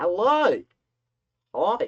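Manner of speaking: very loud, high-pitched, put-on Australian accent. Greeting the camera after a week away, the speaker uses an australian accent. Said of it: "Why am I doing an Australian accent?".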